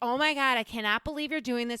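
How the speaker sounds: loud yell. Retelling being stuck in the tub, imitating own yelling.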